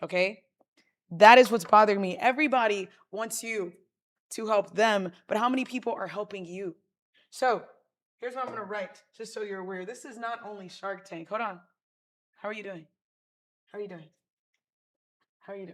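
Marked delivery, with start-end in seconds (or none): 12.4-15.7 quick, repeated, hushed rapid-fire delivery. Speaker mentioning Shark Tank tries out a Shark Tank shark impression. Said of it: "That was my attempt at a shark".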